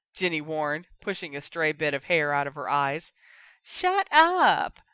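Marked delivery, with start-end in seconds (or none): 3.7-4.7 very high, shrill, loud mocking echo. A boy throws back the words Jenny just said to him; mocking Jenny in a high voice. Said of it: "[name] mocked in a high voice".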